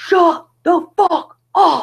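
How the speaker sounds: shrill, very high, slow, drawn-out top-of-lungs scream. Retelling yelling at noisy neighbours from the door: retelling her own scream. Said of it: "So I scream at the top of my lungs".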